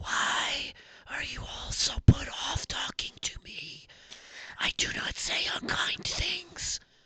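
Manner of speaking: hushed whisper in a potted-tree voice. Voicing a battered potted tree that whispers to the listeners: whispering potted tree voice. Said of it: "we hear the whisper from it like".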